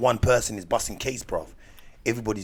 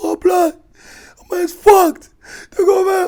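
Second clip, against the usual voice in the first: mock crying, higher and louder; 14 dB louder than usual. Retelling a man's reaction after being banged up: imitating someone crying. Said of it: "He's crying like".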